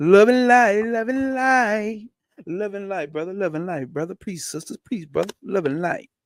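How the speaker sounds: play-acted, derisive, mocking tone dripping with sarcasm. Reading about darkness and light, imitating people who say it: sarcastic mocking imitation. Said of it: "You know I'm being sarcastic here".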